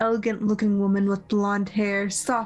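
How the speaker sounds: plain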